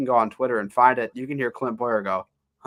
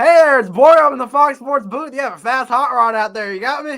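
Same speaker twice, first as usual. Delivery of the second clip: mock excited broadcaster voice, very loud and very high; 13 semitones higher, 10 dB louder than usual. Imitating a race commentator's in-race report from the booth: excited Clint Bowyer impression. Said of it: "he goes".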